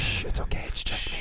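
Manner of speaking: soft, very quiet, barely-there whisper. Acting out whispering into the Raptor's mouth: pretend whisper. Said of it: "that's how I'm gonna do it too".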